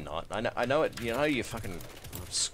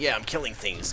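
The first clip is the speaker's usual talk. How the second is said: ordinary talk, nothing marked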